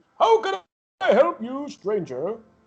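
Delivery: high, swooping, animated character voice. Voicing a blacksmith who greets the approaching player: George Big Man voice. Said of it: "he looks at you and, uh, and goes".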